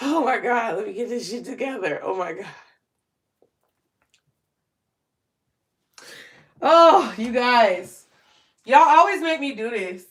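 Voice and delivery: crying through the words, choking up, fighting tears. Addressing the audience, getting emotional and trying not to cry. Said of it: "I'm trying not to cry, but I can't help it".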